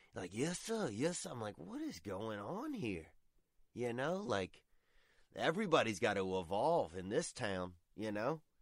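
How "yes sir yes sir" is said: meek, high, servile, deferential servant voice. Retelling a man met while shopping at Walmart, mimicking a subservient servant voice. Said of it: "talks like he's an indentured servant".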